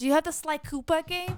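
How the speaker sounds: put-on high, cute little kid voice. Retelling what a six-year-old kid asked at GameStop, in a cute little kid voice. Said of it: "in this like cute little kid voice".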